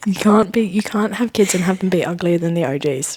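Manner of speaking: hushed whisper. Commenting on celebrities' kids so nearby people won't hear: whispering. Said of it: "Why are we whispering about this?".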